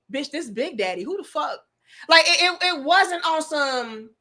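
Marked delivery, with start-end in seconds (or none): 0.1-1.5 assertive, cool, condescending put-down tone. Retelling how Eric answered during an argument: imitating Eric putting someone in their place. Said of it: "It was the way he said it".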